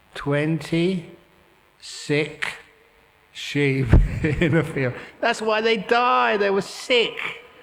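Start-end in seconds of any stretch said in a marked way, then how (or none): 0.1-4.9 slow, halting, deliberate, word by word with pauses. Repeating a riddle to the audience so they get it: speaking slowly. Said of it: "I'll say it slowly".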